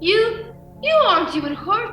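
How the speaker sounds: high, shocked, stunned disbelief. A man who has just fired three shots sees his target unhurt, shocked.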